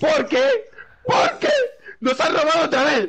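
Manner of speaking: shrill yelling, very high. In an acted scene, one neighbour answers another, shouting. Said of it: "no grites".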